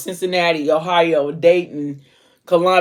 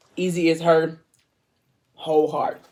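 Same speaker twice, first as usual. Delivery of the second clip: normal talking voice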